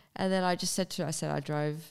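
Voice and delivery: ordinary talk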